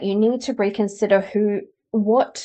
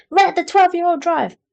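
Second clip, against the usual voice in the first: big, loud voice, pitched up; 9 semitones higher, 5 dB louder than usual. Retelling someone's explanation of the ego, in a big loud voice. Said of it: "the big loud voice going".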